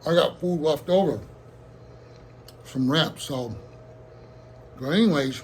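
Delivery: speaking while chewing, mouth full of food. Speaker eating leftovers in front of viewers, talking while eating. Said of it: "Excuse me for eating".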